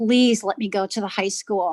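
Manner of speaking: put-on tearful, sobbing, pleading voice. Retelling pleading with dad, imitating own past sobbing plea. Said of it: "just sobbing and crying and say".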